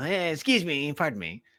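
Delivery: goofy small put-on voice, high and slow. Showing the others a voice used when saying excuse me: silly put-on voice. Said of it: "That's just a voice I do when I'm".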